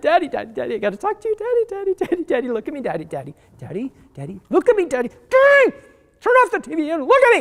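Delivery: put-on giddy, high, swooping excited child voice. A father acts out his daughter rushing in to interrupt his game, imitating an excited child. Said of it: "You're so excited".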